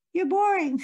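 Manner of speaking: tiny, shrill, very high, squeaky cartoon peeping voice. Imitating the shrunken inner critic Nigel: wee peeping cartoon voice. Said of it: "a wee peeping cartoon character".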